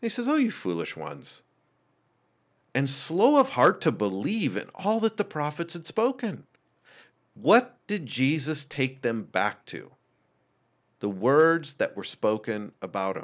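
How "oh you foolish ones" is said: very low, soft, fond teasing, acted out. Retelling how he spoke to his followers; retelling playful teasing. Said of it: "he's being playful this whole entire time".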